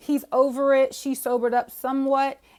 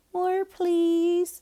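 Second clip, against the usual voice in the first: put-on babyish baby-talk voice, high-pitched; 6 semitones higher than usual. Mimicking a woman's line during a kissing scene, in a baby voice. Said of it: "stop talking in the baby voice".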